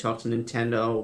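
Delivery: ordinary delivery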